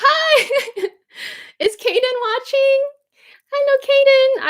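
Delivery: very high, sweet, doting auntie voice. Greeting a young relative on a video call in an affectionate, put-on tone. doting auntie voice. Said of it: "I just made auntie voice".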